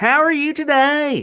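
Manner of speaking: very high, slow, caricatured Southern drawl. Showing the caricature done of Sessions: caricature of Jeff Sessions. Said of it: "what I'm doing with Sessions".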